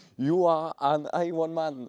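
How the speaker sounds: put-on proper English accent, very high and loud. A French speaker says the Ironman phrase in English; good English accent. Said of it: "avec le bon accent anglais".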